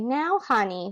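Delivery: sugary sweet, sweet-talking voice. Reading a story aloud, a teacher warning a student: sweet-talking voice. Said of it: "real sweet".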